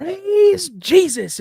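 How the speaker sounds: very high, loud, mocking put-on shouting voice. Imitating a TV preacher to make mom laugh: imitating Kenneth Copeland. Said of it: "imitating him".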